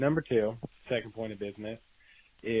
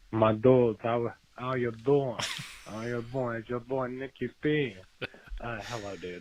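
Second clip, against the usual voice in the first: terrible put-on Italian accent. After others brought out accents, trying a terrible Italian accent as Nicky P. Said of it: "try out my terrible Italian accent".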